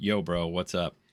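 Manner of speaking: soft, casual, offhand tone. Commenting on a played clip, imitating Mike: imitating Mike. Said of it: "little Mike there is going like".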